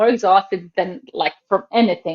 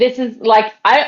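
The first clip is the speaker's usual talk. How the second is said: ordinary talk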